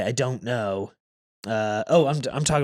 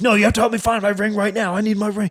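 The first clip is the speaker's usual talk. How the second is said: play-acted furious raging outburst, loud and high; 9 semitones higher, 5 dB louder than usual. Retelling how a customer demanded help finding his ring: imitating a raging man.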